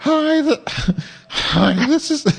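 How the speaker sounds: put-on falsetto voice.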